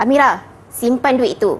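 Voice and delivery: firm, stern tone. Example of a mother giving Amira an instruction, firm directive tone. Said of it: "arahannya lebih tegas kan".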